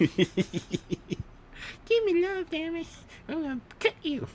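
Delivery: cat voice, pitched way up, very high. On a podcast, the speaker does a cat; cat voice impression. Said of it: "That was my impression of a cat".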